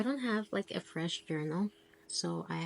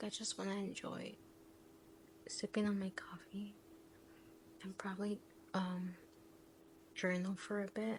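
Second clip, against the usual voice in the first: very soft, hushed, breathy whisper; 2 semitones higher, 9 dB quieter than usual. A parent talks to the camera while her daughter sleeps nearby, whispering. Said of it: "I have to whisper because my daughter is asleep".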